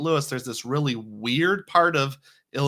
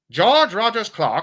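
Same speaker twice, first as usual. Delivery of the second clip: raised, pitched-up historical documentary narrator voice; 6 semitones higher, 5 dB louder than usual. Teaching what happened at a place, in a historical video announcer voice. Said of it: "Historical video announcer voice".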